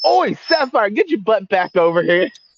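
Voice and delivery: high yell. Calling out in character across the camp: character yelling. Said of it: "My characters are just going to yell".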